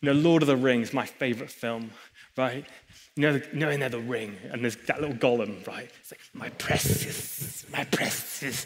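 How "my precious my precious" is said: slow, breathy, drawn-out whisper, done badly. Speaker explaining money's grip through Lord of the Rings, bad Gollum impression. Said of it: "I can't do a very good accent".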